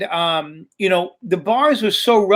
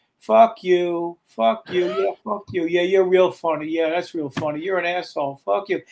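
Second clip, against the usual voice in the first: loud stage whisper meant to carry; 4 dB quieter than usual. Retelling a mobster in the audience threatening from his seat: imitating a heckler's loud whisper. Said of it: "he's whispering it loud enough where I can hear him".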